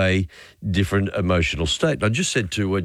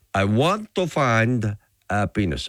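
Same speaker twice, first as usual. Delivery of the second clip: imitated Mexican accent; 2 semitones higher than usual. Retelling an old gag, voicing the man in a Mexican accent. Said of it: "in that beautiful Mexican accent".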